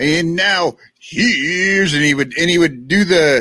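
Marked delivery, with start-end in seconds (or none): 0.0-1.9 announcer-style delivery, pitch lifted high. Recalling an old TV show host reading off guests quickly: imitating Ed McMahon. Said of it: "He'd be like".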